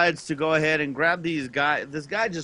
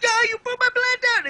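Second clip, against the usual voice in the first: mock very high screaming outburst; 3 dB louder than usual. Telling a story of a man who screamed at him and John: imitating a man screaming. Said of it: "And he's screaming at us".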